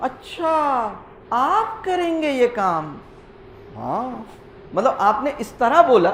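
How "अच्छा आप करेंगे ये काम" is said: swooping, mocking, needling sarcastic tone. Showing how a question turns into a sarcastic taunting tone. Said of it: "टोन जो है वो sarcastic हो जाती है".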